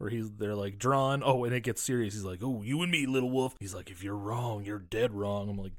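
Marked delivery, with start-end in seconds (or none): 2.4-5.5 deep, gruff, quieter put-on cowboy voice. Quoting a man in a dream sequence, in a deep gruff cowboy voice. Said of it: "he got that deep, gruff cowboy voice".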